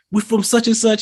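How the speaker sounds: acted-out rowdy hollering, very high. Retelling a red carpet interview where someone shouts out his block: imitating someone shouting. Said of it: "shouting out his block".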